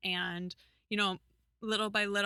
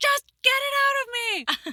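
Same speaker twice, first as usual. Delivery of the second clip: put-on scream, higher and louder; 11 dB louder than usual. Retelling a dream of giving birth in hospital: imitating own screaming.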